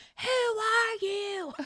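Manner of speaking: mock, piercing, shrill, high-pitched loud screaming outburst. Describing a man reenacting a beating in a documentary, retelling a scream.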